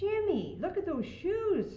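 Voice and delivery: very high, slow, drawn-out scolding tone. Reading a story, a mother sees her son's mud-caked shoes, scolding. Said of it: "scolded Mom".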